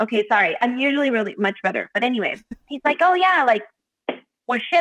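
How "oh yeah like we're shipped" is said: very high-pitched put-on voice. Retelling what a friend said on first meeting: bad Johnny impression. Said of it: "I'm not doing a good job of you, Johnny".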